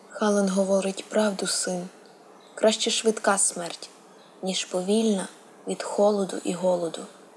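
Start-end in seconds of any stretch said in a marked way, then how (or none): none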